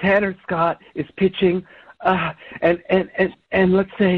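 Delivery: stammering, stuttering, stumbling over words. Pressed for a sports update, a character describes an imagined play, stuttering. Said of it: "Stop stuttering and get to your point".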